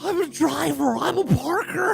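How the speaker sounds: rough, creaky, high-pitched comic caricature rasp. Redoing a character line based on an impression of Harry Carey: Harry Carey voice. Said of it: "based on Will Ferrell's imitation of Harry Carey".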